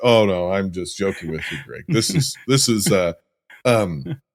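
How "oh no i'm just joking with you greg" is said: mock-mortified, lower, quieter, faster. Retelling a man's reaction after shouting at a woman, imitating mortified backpedaling. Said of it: "and then like he's mortified".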